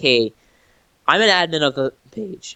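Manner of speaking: cracking voice that breaks mid-line. Telling a story, quoting an admin's message, his voice cracking. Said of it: "Oh, voice crack!".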